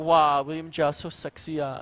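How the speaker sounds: put-on Singaporean accent, slow. Repeating the chat comment as first read: singaporean accent. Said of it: "So I was just like".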